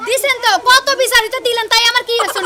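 defiant angry tone.

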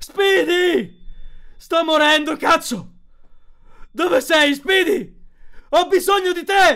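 desperate shout. A man backing away from a huge robot calls out one last time, shouting desperately. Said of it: "Gridò un'ultima volta, disperato".

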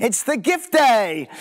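high, loud, slow, enthusiastic proclaiming voice. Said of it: "I say it with enthusiasm".

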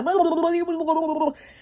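high, rattled-off, fast babbling.

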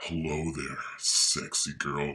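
voice dropped very low, really deep. Describing how testosterone changed their voice, showing a really, really low voice. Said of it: "My voice got really, really low, like".

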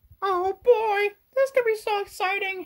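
put-on cartoon mouse voice. Explaining why he came to the show: Mickey Mouse voice. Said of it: "it's me, Mickey Mouse".

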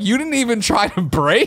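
exasperated voice.

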